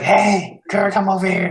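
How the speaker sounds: shouted stage whisper. Character beckoning gur to come over, whisper yell. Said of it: "it's like a whisper yell".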